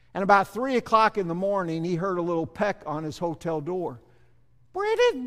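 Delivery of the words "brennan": put-on very high-pitched elderly nun voice. Retelling a nun calling through a hotel door at night: high-pitched old nun voice. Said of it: "a seventy-eight-year-old nun with a high-pitched no-, voice".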